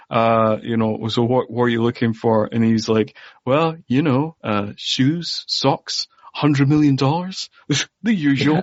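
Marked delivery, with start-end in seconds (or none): 3.4-8.6 put-on posh, plummy upper-class English accent. Retelling a man's answer to a question, imitating plummy english accent. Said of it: "in his beautiful plummy English accent".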